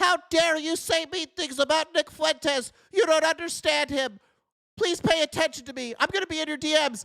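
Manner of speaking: whiny, pleading, very high voice. Mocking the Groypers who beg for attention in DMs, a mocking whiny voice. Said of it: "whiny bitch Groypers".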